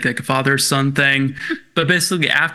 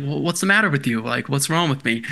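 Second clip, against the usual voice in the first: ordinary delivery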